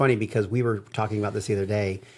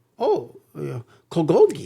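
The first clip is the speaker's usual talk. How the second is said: put-on, very high, swooping, sing-song voice; 9 semitones higher, 3 dB louder than usual. Telling a story, quoting people's answer to what was going on, imitating how they talked. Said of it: "We don't need to do their voice".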